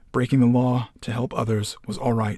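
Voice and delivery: ordinary talk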